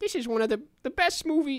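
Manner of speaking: very high-pitched cartoon rabbit voice. Asked to do a voice talking about Parasite: Bugs Bunny voice. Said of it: "Bugs Bunny, uh, talking about Parasite".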